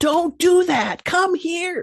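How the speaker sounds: yelling, very high-pitched. Explaining the difference between yelling and screaming, demonstrating yelling. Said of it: "I'm yelling at you".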